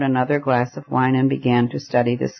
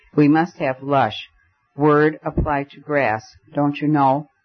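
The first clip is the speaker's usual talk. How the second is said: usual speaking voice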